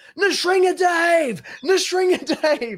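shrill, booming, very high, very loud yelling. Speaker retells a man behind him at a kirtan, retelling a guy yelling. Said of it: "just starts yelling".

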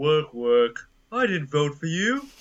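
dutiful video game peasant worker voice. Chiming in with game quotes, in a Warcraft 3 peon voice. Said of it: "did the peon voice in Warcraft 3".

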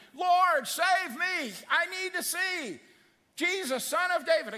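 very high, very slow, drawn-out screaming cry. Acting out a blind beggar crying out to jesus: acting out a scream for help. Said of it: "I'm screaming".

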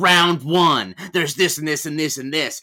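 put-on forced, effortful, strained American accent. Retelling a film plot, speaker voices the caller listing rounds, strained American accent as Aidan Gillen. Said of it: "I'm doing a strained American accent".

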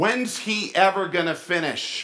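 loud, high, carrying outdoor voice. Retelling a woman at a church service leaning to mom, quoting her loud outdoor voice. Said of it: "in her nice outdoor voice".

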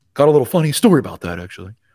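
put-on just a slight hint of cowboy accent. Retell a man's answer to Peyton's question about a blitzing safety, in a little cowboy accent. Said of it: "It's a little cowboy accent".

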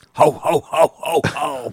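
broken-down, raspy, worn-out ho ho laugh. Counting down three weeks to the holiday, a host lets out a broken-down chain-smoking Santa laugh. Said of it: "You sound like a broke down Santa that just smoked three packs of cigs".

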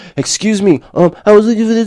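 meek, timid voice. Demonstrating the weak way they used to interrupt, in a meek, timid voice. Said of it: "like a little fucking bitch".

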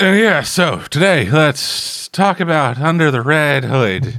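slow, unenthusiastic delivery. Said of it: "don't sound too excited".

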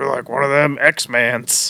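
slow, drawn-out chain-smoker trucker voice. Imitating a truck driver in a show: imitating a heavy smoker's voice. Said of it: ""I've smoked eight packs of cigarettes a day for forty years" ass voice".

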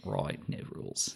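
whispered, clumsy, awkward put-on Australian accent. Quoting the restaurant chain's slogan, in an awkward faux Australian Outback accent. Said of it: "really awkward faux Australian accent".

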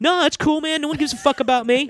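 high, whiny little meltdown.

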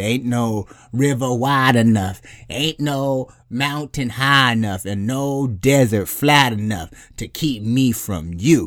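slow, weighty, commanding, authoritative delivery. The speaker quotes Mama Joy in an authoritative Mama Joy impression. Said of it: "I've never heard you sound so authoritative".

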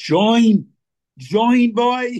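put-on Trinidadian accent. Retelling their dad's answer, the speaker quotes him in a full Trini accent. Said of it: "with the full Trini accent".

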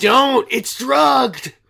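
very loud, shrill, booming, raspy, rough yell. Recapping a scene where a man warns a woman not to drink: retelling a yell. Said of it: "he just yells".

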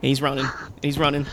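normal talking voice

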